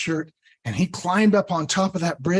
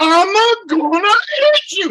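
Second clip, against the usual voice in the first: deliberate over-speaking, very loud, very high, slow; 9 dB louder than usual. Retelling Sven answering a little goat: Sven speaking louder and slower. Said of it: "if you speak it louder and slower".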